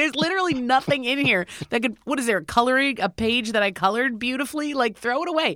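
high, fed-up, exasperated yell. Speaker retells telling their mom to throw out a moldy bag of papers, retelling a yell. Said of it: "as I'm like yelling her to throw it away".

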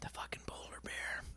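hushed, whispered voice.

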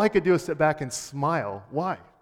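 ordinary delivery

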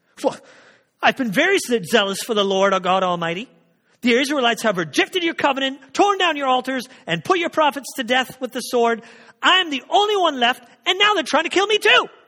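heated angry rant. Reading aloud a prophet's reply to God's question, in a put-on mad tone. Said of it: "either in a mad tone".

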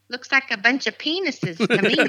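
tiny, little, squeaky voice. Retelling what Rob said in a crowded room, imitating Rob's squeaky voice. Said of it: "this little squeaky voice".

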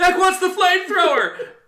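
very high, loud yell. Sharing a favorite quote and showing how it must be said: yelling the quote. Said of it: "And you gotta yell".

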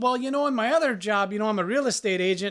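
put-on chatty, talking-away Minnesota accent. Retelling what a talkative gas station cashier said: minnesota accent. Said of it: "giving us all the, the Minnesota talk".

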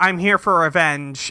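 ordinary delivery

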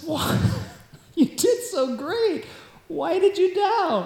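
put-on laughing, smiling, high and slow. Picturing Jesus lifting someone up while asking the question: laughing, smiling. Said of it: "cracking up, smiling".

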